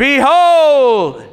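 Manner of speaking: loud, grand movie-hero voice, every syllable stretched. Speaker on a Bible verse, telling listeners to say it like Gandalf: Gandalf-style Behold. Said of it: "say it like Charlton Heston in a movie".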